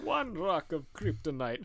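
vampire character voice. Describing Batman and Superman fighting, the speaker counts in the Count from Sesame Street voice. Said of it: "We just do that voice the whole time".

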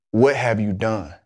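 put-on frightened, pained tone. Retelling his mother's phone call about the trouble: imitating mom's pained, fearful voice. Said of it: "the pain that I could hear in her voice and the fear in her voice".

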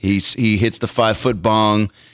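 usual speaking voice

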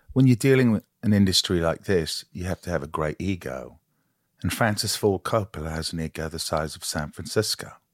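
put-on English dialect. Demonstrating an accent and asking where they sound from: english accent. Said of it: "So you are from America doing an English".

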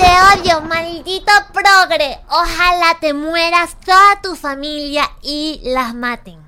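put-on baby voice. Showing how someone imagines a character sounds, bebé hater voice. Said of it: "así suena el bebé hater".

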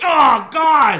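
very high, shrill, very loud yell. Retelling him sliding back and grabbing his stuff: imitating Tom Phillips yelling. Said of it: "Tom Phillips yells".

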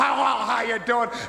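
mocking put-on brash wrestler voice. Mocking another wrestler's talk segment: mocking Roddy Piper. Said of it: "he's mocking Roddy Piper in Piper's Pit".

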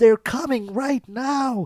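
very high, all-out yelling at top of lungs. Retelling a character's shout from the shore: imitating Carl yelling at top of lungs. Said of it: "he is yelling at the top of his lungs".

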